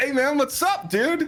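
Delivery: loud, high-pitched, excited yell.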